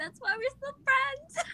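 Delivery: weird, high-pitched, slow put-on voice.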